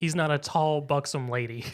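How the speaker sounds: normal talking voice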